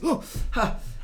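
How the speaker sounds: startled yelp, high-pitched and loud.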